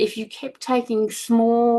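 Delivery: SMALL lifted high and stressed.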